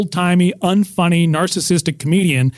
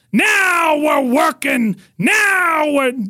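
very high, very slow acted-out holler; 9 semitones higher than usual. Retelling yelling after every joke on stage: imitating his past yelling. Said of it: "I would yell".

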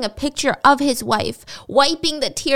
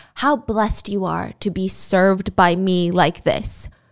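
put-on whisper, lower; 5 semitones lower than usual. Retelling words whispered over a corpse in a video: imitating a whisper. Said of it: "He would whisper".

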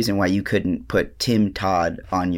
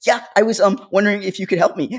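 put-on voice, pitched much higher; 12 semitones higher, 4 dB louder than usual. Recalling how she sounds when asking for help, retelling her put-on higher voice. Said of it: "my voice higher gets voice. Higher".

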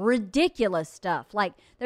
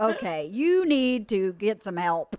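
ordinary talk, nothing marked

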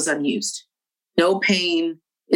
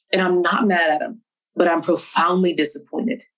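ordinary delivery

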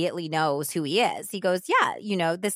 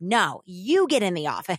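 put-on yelling. Retelling a woman's defiant answer to an attacker: imitating someone yelling back. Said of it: "yelling at him back".

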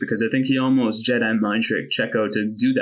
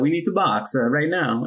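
put-on over-the-top Italian accent; 4 semitones higher than usual. Mocking a team radio message to the drivers, Ferrari radio's stereotypical Italian accent. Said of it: "the most stereotypical Italian accent".

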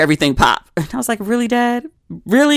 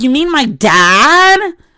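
put-on very slow, high, obnoxious teenage drawl; 6 semitones higher, 5 dB louder than usual. Retelling a reply to a woman at a dinner table: obnoxious teenage voice. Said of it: "I said it in my most obnoxious teenage voice".

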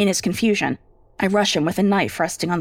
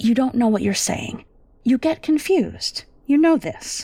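firm, insistent tone, pitched a little high; 5 semitones higher than usual. Reading a story aloud, voicing the wife reasoning with her husband: firm tone. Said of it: "I firm my tone".

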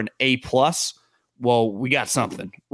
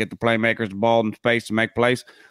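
put-on Southern voice. Discussing football offense, making fun of a common saying, mocking southern voice. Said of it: "in our Southern voice".

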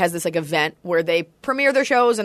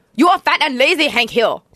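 high, loud mock Laotian accent. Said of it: "for the Hank King of the Hill goes like".

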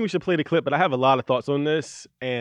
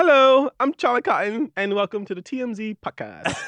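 put-on high, slow Australian host accent; 7 semitones higher, 4 dB louder than usual. Imitating the host's podcast intro in an Australian accent. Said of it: "do an Australian accent".

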